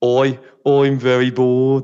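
put-on Birmingham accent. Asked which other accents they can do, trying one out, Brummie accent. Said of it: "Which one's Brummy?".

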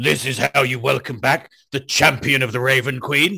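proclaiming, declared like a public announcement. In a role-playing game, announcing a prayer outside the inn, very loud announcement. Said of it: "I very loudly say".

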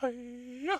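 very high, loud squealing put-on voice, belted out.

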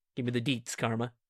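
relaxed, laid-back, too-cool delivery. Voicing a character leaning back in a store aisle: cool, laid-back delivery. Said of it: "leans back all cool-like and goes".

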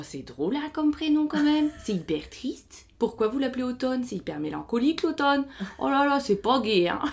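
put-on comic, high-pitched accent from northern France. Retelling what a nursing assistant said after the birth, with a northern French accent. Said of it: "avec un accent du nord".

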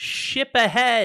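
very high, loud, far-carrying shout. Voicing an archer in a crow's nest: shouting from the crow's nest. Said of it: "Lenora the archer, uh, shouts".

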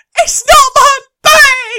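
very high, very loud, shrill, stressed Essex screaming. Recounting what a woman shouted while they were stressed, retelling her screaming. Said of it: "I could just hear her screaming".

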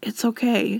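fatherly dad voice. Retelling a movie goodbye scene, imitating Robin Williams' dad voice. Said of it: "using his, like, dad voice to be like".

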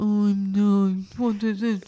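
gloomy mopey voice. Listing the characters of the magic house, the speaker voices Barney Bin: Barney Bin voice. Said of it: "he's a bit like Eeyore".

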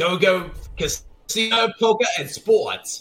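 very slow, put-on New York accent. Podcast host reading a betting-site ad: mock new york accent. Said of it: "I'm doing New York accents throughout this whole episode".

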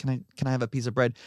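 mock-weak frail voice. Retelling what a man who hasn't eaten in weeks asked, imitating a feeble voice. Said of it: "so he just says in a really feeble voice".

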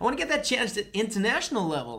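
exaggerated, theatrical American accent. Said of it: "Camp American".

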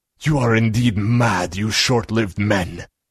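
sibilant hissing vampire voice. Narrator reading a vampire's words to mortal men, vampire hissing. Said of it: "the vampire hissed".

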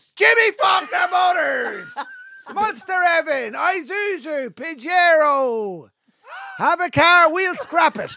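hard-sell radio ad voice with one word drawn out. Pitching a local radio ad for Jimmy Faulkner Motors, shouting radio ad. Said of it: "You could shout and go back".

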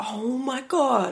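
shocked realization. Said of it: "you're like".

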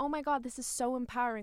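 ordinary delivery

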